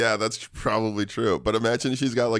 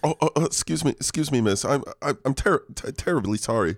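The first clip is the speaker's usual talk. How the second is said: bumbling British gentleman voice, pitched higher; 4 semitones higher than usual. Acting out a bumbling British man bumping into a woman: bumbling Hugh Grant voice. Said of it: "Like a Hugh Grant, like a bumbling".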